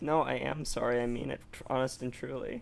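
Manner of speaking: fake sincere voice. Apologizing to the other speaker for drawing them: fake sincere apology voice. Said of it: "that's the voice that you do when you absolutely don't mean it".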